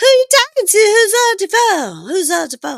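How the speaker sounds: loud put-on drunk voice, pitched way up. Retelling a scene, quoting a drunk woman asking about a call: imitating drunk speech. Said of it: "she's drunk as shit".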